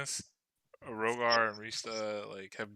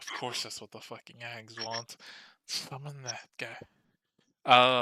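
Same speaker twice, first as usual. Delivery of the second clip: sighing, exasperated grumble said aside to herself. Voicing a character who mutters after a hard sigh: muttering under her breath. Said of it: "you can kinda hear her under her breath".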